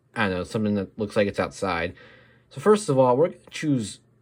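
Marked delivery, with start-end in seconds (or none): 2.5-3.9 high voice cracking and breaking mid-line. Narrating a drawing tutorial, the speaker's voice cracks. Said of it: "that's a terrible voice crack".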